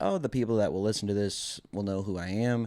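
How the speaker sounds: plain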